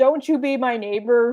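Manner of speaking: normal talking voice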